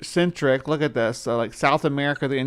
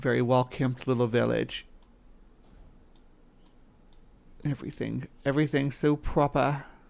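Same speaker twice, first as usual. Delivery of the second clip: fake British accent, quieter; 6 dB quieter than usual. Describing how a village looks, in a put-on British accent. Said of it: "I shouldn't use a British accent".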